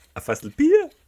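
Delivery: loud pitch rise to very high on Bier. Repeating someone's question about a barrel of beer: rising pitch on bier. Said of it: "mit der Stimme so nach oben".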